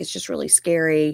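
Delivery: ordinary talk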